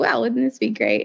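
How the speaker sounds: normal talking voice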